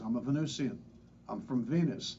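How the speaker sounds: ordinary delivery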